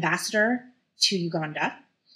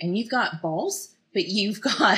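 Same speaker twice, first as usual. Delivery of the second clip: stifled giggles breaking through the spoken words; 2 semitones higher than usual. Asking a business owner about her products, laughing while talking. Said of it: "hard to say that without laughing".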